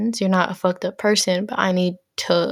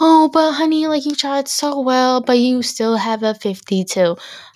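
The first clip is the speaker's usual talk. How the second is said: mock fake-sweet teacher voice, higher; 5 semitones higher, 4 dB louder than usual. Mimicking teachers who sound sweet while telling you you're failing, mock-sweet teacher voice. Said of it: "try to sound sweet when they tell you you're failing".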